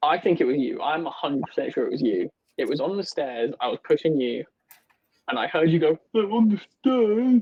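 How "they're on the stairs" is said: put-on, very high, frightened squeal. Retelling what another player said on the stairs, imitating a scared voice. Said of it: "You seemed scared".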